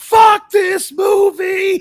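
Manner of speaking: very loud, very high shrieking freak-out. Act out a 30-year-old woman watching a movie scene for the first time, imitating her freaking out. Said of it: "And she's freaking out".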